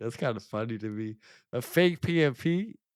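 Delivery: slow, amused talk broken up by laughter. Reacting to hearing about a fake certificate: laughing while talking. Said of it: "I'm just laughing 'cause".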